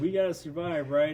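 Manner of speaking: unbothered, matter-of-fact tone. Retelling a character's line before an attack: imitating Inferno's calm voice. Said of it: "He's like".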